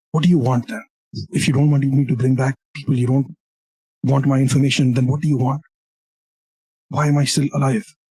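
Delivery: frightened, rattled, terrified voice. Game master voices a chained prisoner after words whispered in his ear: terrified. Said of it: "see he's terrified, visibly shaken".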